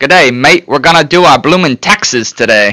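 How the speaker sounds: put-on Australian accent. Asked by the other speaker to give their Australian accent, put-on Australian accent. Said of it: "give me your Australian accent".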